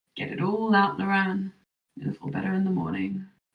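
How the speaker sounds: soft, drowsy, dreary, half-asleep voice. A game master voices Sarza speaking to Loran from the top bunk, dreary, sleepy tone. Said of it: "say in a drearing, sleepy tone".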